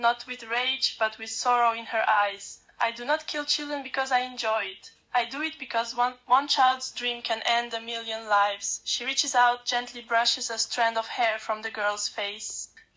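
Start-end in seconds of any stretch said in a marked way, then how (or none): none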